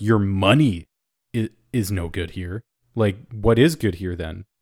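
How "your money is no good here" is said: money punched with strong stress. Discussing which word in a phrase to emphasize, stress on money. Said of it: "is it money where it's like".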